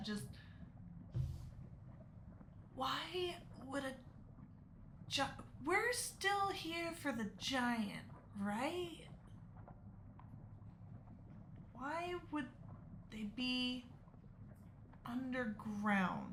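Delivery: stage whisper. A player speaks in character during the game in a stage whisper. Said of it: "I'm just gonna kind of stage whisper".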